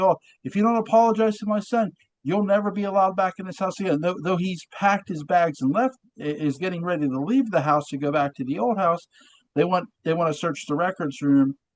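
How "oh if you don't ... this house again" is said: stern, high-pitched, loud yell. Discussing a scene where Roger comes home, imitating Roger yelling. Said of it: "he yells at Barnabas like".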